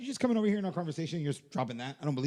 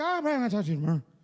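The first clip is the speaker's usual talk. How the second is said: reedy, high, put-on Irish lilt; 4 semitones higher, 3 dB louder than usual. Describing an always-drunk, high-voiced man, imitating high irish accent. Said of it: "like my Irish accent".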